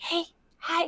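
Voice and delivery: tiny, very quiet, high-pitched whisper. Imagining how the tiny game units talk: tiny whispering unit voice. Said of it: "all the tiny units have to whisper".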